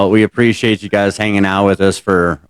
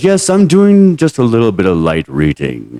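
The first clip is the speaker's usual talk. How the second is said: sing-song delivery with pitch swooping up and down; 2 semitones higher than usual. Retelling George Takei answering his husband: George Takei impression. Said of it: "And then he goes".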